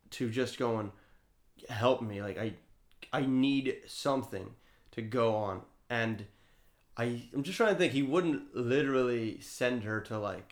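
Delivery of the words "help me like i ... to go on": normal talking voice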